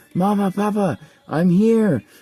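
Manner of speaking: put-on piercing, very high, loud girl's shriek. Narrating a battle in a game, the storyteller voices a character landing: screaming. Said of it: "and she screams".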